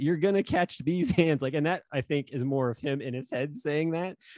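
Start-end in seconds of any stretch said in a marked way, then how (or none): 0.0-1.4 put-on yelling, higher pitch. Retelling a post where Anthony yells at a child: imitating someone yelling. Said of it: "he basically just yells".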